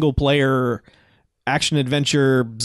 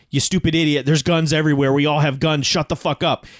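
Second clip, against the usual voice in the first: mock furious, angry yelling. Speaker retells a man yelling back at a radio broadcaster, retelling an angry yell. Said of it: "He's always just yelling at him".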